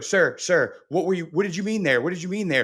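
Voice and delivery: mock polite, deferential tone. Speaker acts out referees questioning a coach, imitating a deferential referee. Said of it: "Kirby Smart is a coach that can get that".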